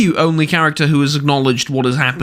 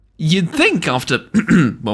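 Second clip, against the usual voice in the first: voice cracking and breaking mid-phrase; 4 semitones higher than usual. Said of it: "what a voice crack".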